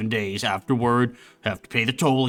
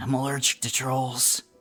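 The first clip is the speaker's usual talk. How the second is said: hushed whisper under the breath; 2 semitones higher, 4 dB quieter than usual. In a game, Bungle speaks from inside a bag, Bungle whispering. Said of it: "as he whispers".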